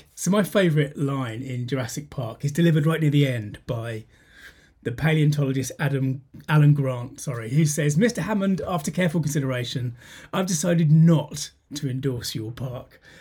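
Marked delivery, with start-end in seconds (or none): none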